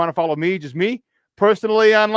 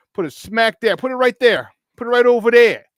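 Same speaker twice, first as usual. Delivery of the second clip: Chicago way of talking; 4 semitones higher, 3 dB louder than usual. Telling listeners to download the Sports Zone Chicago tile, in a Chicago accent. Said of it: "my Chicago accent".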